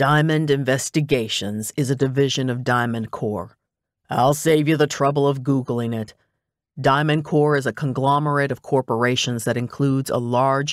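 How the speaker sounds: ordinary delivery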